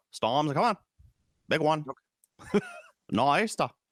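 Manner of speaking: put-on standard Maine accent. Speaker demonstrates their standard accent when asked, doing a Maine accent. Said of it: "my standard Maine accent".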